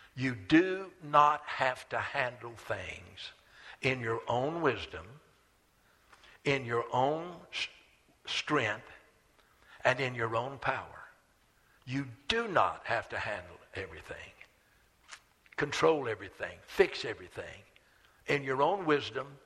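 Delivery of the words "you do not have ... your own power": slow, deliberate delivery, drawn out word by word. A speaker repeats the most important point to the audience, said slowly. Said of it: "let me say this slowly".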